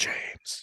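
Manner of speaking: soft, hushed whisper under the breath. Retelling how he whispered to his son at the window: retelling a whisper. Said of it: "I whispered to my kid".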